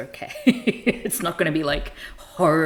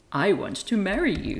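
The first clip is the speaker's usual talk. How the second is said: put-on smug delivery, higher; 4 semitones higher than usual. Retelling a soap scene, quoting a suitor: imitating a smug line. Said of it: "he says smugly".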